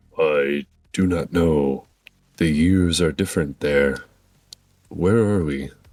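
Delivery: low, slow spirit creature voice. Voicing a spirit creature that answers a player in Draconic: voicing the spirit creature. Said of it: "do you wanna do the voice".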